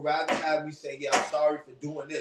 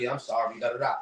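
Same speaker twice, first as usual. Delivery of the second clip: mock-nonchalant, careless tone, much lower pitch; 4 semitones lower than usual. Explaining how they are not apologizing, acting it out: mock-nonchalant apology. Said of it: "mad nonchalant with it".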